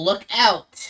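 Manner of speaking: goblin voice calling out. Voicing the goblin Steve warning the party: goblin yelling a warning. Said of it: "Steve yells".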